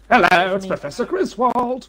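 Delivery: put-on old man scientist voice. Speaker trying out a character for the group, Professor Griswold old-man scientist voice. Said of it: "It's like an old man scientist".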